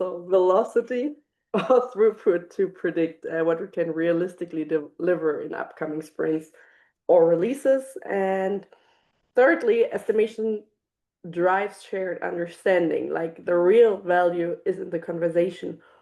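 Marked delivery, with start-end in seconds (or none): 0.0-3.3 speaking through bursts of laughter. Explaining estimation in a webinar, stumbling on a word: laughing while talking. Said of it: "I'm so sorry that I'm laughing".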